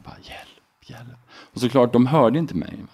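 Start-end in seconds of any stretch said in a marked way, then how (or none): 0.2-1.2 soft, faint, weak whisper. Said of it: "det kom bara ut en viskning".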